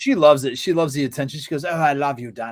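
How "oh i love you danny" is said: put-on posh, upper-class English accent. Describing a Punjabi woman from England, imitating her high-class English accent. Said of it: "it's very high class".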